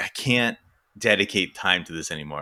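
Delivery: normal talking voice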